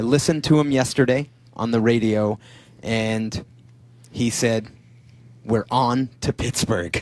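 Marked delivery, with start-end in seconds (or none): 5.4-7.0 slow delivery broken by weighty dramatic pauses. Quoting what a player said on the radio, with dramatic pauses. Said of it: "I had the dramatic pauses there".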